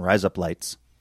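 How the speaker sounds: razor blades pronounced with an Australian accent. Showing how razor blades sounds in australian: australian accent. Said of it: "That's how you say razor blades in Australian".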